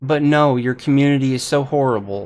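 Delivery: loud, fast, sarcastic jab.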